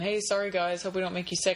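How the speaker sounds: plain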